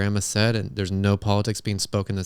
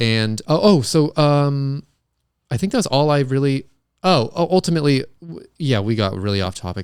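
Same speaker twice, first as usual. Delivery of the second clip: halting, stumbling stammer, raised and high; 5 semitones higher, 6 dB louder than usual. Trying to wrap up after getting off topic: stuttering. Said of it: "and I'm stuttering now".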